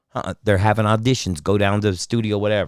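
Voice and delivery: ordinary talk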